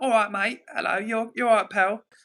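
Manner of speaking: Essex Londoner accent. Talking about favourite English accents, doing a London Essex accent. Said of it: "like the Londoners, the Essex lot".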